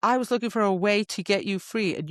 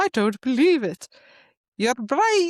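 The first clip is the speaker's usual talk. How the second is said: loud, failed, bad put-on Irish accent; 4 semitones higher, 5 dB louder than usual. Retelling a book scene, the speaker voices the laughing king in a failed irish accent. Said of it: "I can't say Irish".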